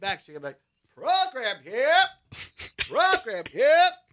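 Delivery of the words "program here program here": rhythmic, loud, high stadium vendor call. Recalling selling programs at Brewers games, showing the right hawking cry: program vendor's call. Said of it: "You got to have the right voice".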